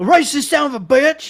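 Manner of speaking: put-on loud, bellowed, terrible British accent. Try the interviewer's line again after admitting your accent was horrible, as a bad Piers Morgan impression. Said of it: "That just sounded like a drunk hillbilly".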